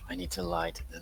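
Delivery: quiet mumbling under breath. Voicing a character in the game, muttering under his breath. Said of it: "he mutters under his breath".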